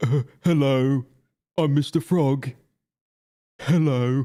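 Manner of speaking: every word drawn out slowly. Mocking what a character keeps saying: Mister Frog voice. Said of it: "apart from just going".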